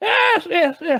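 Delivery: put-on hill-folk lady voice, pitched high. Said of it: "And she's like".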